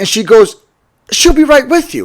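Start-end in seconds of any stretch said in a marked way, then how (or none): 1.1-2.1 pitched-up, patronizing, condescending talking-down brush-off tone. Retelling being told to wait, the speaker mimics a girl's condescending tone. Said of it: "kind of in a condescending tone".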